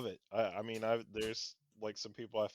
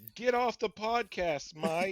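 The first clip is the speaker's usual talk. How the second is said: put-on dog voice yelling, higher and louder; 11 semitones higher, 6 dB louder than usual. Voicing another speaker's dog that needs to go out: put-on yelling dog voice. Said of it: "He sounds like he's yelling at you".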